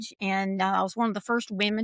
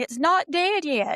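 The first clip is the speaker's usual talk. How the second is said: put-on high, drawn-out yell; 7 semitones higher, 3 dB louder than usual. Retelling an early memory in the dove field: imitating father yelling. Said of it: "him yelling at me".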